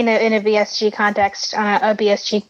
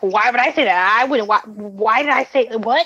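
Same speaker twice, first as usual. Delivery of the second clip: put-on defensive tone. Retelling how a character answered, imitating a defensive tone. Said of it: "the tone of her voice was like".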